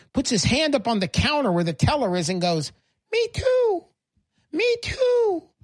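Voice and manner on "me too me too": tiny, very high, very slow squeaky voice. Telling a joke, the little voice at the teller's counter pipes up: tiny Uncle Sam voice. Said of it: "this little voice from down by your shins".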